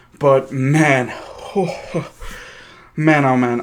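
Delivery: breathless and excited. Right after the Giants game, speaker reacts, out of breath and excited. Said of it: "I am trying to catch my breath".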